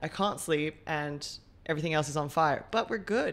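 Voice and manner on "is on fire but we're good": ordinary talk, nothing marked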